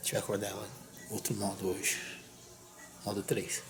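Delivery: barely-there, hushed whisper. Speaker tells viewers the plan for waking her up, speaking softly. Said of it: "Deixa eu falar baixinho".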